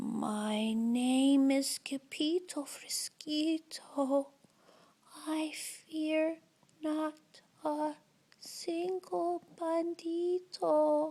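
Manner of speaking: very quiet, soft, hushed, barely-there voice. Narrating a story as the sword fighter answers the banditos, very soft voice. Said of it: "in a muy, muy soft voice".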